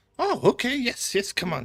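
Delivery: put-on bright, very high, loud, cheery old-woman voice. Voicing a cheerful elderly lady greeting visitors: cheerful elderly lady voice. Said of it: "she just looks like the most cheerful old lady".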